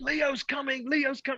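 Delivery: mock, very high-pitched, thrilled, excited yelling. Retelling how someone went to bed shouting: imitating an excited shout. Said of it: "He went to bed shouting".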